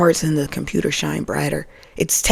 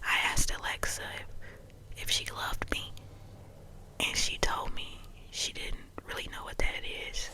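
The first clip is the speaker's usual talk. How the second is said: whispered, hushed, barely audible; 20 dB quieter than usual. Recounting a story to the listener: whispering. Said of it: "So I'm whispering because you know why".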